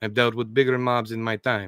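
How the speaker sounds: plain reading voice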